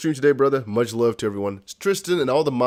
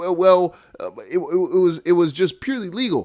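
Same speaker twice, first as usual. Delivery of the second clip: put-on higher, halting stammer like a little baby; 6 semitones higher, 3 dB louder than usual. Acting out the SEC woman answering the judge, imitating someone stuttering like a little baby. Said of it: "stuttering like a little baby".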